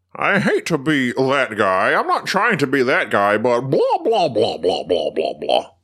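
slow, drawn-out, swooping annoying-guy voice. Retelling what an annoying guy kept saying: imitating an annoying audience member. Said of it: "That was an accurate impersonation".

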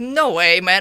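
mock angry, disbelieving, pissed-off outburst. Recounting the moment of breaking something on landing, retelling being pissed off. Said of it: "I was so fucking pissed".

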